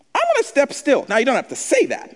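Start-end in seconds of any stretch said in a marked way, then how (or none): 0.1-1.0 voice pushed to a very high pitch. Leading the church in practicing a line to say: high-pitched tone. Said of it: "especially not in my high-pitched tone".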